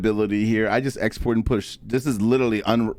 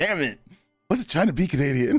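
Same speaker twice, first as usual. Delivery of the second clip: put-on annoyed tone, higher; 5 semitones higher than usual. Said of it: "She's like".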